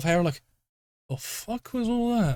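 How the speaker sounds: confused mutter to oneself. A narrator voices a confused man looking around, muttering to himself. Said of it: "you kind of hear him muttering to himself".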